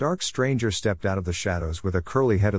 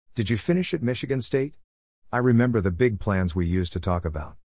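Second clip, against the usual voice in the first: plain reading voice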